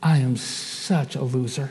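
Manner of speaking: low, soft, self-reproachful tone.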